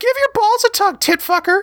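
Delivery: squeaky, very high falsetto voice. Quoting a show's line as the actor delivers it: high falsetto voice. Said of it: "he delivers the line in a falsetto. So it's".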